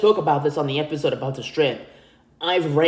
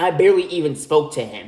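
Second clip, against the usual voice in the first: plain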